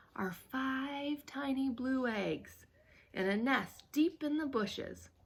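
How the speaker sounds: barely audible hush, "five" stretched out. Narrator reading Sister's words to Brother in a soft, hushed voice. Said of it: "said Sister in a soft, hushed voice".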